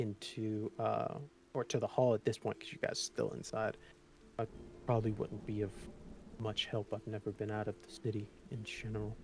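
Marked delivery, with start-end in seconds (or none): 4.4-9.2 bashful, soft, gentle voice, much quieter. Playing a character who offers help but points to the hall, soft bashful voice. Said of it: "kind of like a soft, bashful uh, voice".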